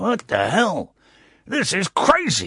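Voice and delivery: gruff put-on voice, swooping and drawn out. Reacting to a news story about a new boss: gruff put-on voice. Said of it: "I'm doing someone's voice there".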